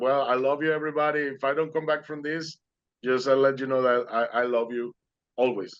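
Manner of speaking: normal talking voice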